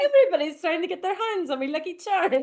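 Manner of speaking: very high, very loud cartoon leprechaun voice. Saying he only does one voice, demonstrating the Lucky Charms guy voice. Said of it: "I can do the Lucky Charms guy".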